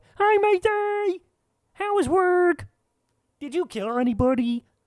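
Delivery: voice pitched way up, taken slow. Retelling how the other speaker greets them: Kermit the Frog voice. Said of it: "the Kermit the Frog that you just drop on me".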